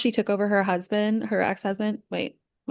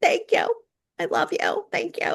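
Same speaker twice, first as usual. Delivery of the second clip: very high, tearless, bad fake crying sob; 9 semitones higher than usual. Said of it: "no tears. Just like the".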